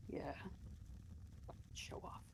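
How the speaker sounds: barely voiced, whispered mutter under the breath. Tabletop game, a character reacts to a report, muttered under breath. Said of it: "She mutters that under her breath".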